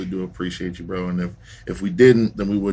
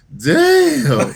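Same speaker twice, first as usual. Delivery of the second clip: high, loud, laughing, blurted-out "damn". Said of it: "my favorite from Dom is".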